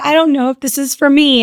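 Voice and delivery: play-acted crying voice. Retelling a phone call to the guest: retelling own past crying. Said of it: "I called him basically crying".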